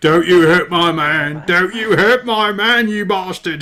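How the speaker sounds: colossal, booming, high giant woman bellow. A giant woman defends her man from behind you, colossal hill giant woman voice. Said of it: "this colossal hill giant woman voice".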